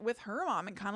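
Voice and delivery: normal talking voice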